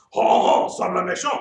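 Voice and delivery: loud, big, put-on French accent. Showing listeners how to say a science word: French accent. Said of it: "say it like you just got back from France".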